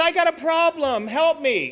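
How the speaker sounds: mock pleading, slow, earnest and humble. Retelling how a buddy asked for help: imitating someone pleading. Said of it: "he pleads".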